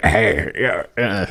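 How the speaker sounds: throat-straining put-on character voice. Showing how the character Bonge is voiced: Bonge voice. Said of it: "I have to kind of talk like this".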